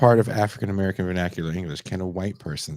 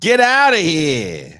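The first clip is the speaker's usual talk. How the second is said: brash, very high New York accent holler; 9 semitones higher, 8 dB louder than usual. Teasing someone who dislikes their own New York accent: mock yell in New York accent. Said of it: "you want to yell at someone right now".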